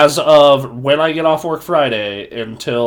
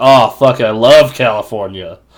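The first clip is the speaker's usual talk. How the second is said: heavy sarcasm, fake enthusiasm; 2 semitones lower, 4 dB louder than usual. Stuck in Bay Bridge traffic, retelling what he said, retelling a sarcastic remark. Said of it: "I just sarcastically go like".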